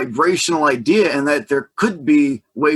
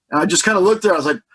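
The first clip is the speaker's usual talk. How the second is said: ordinary talk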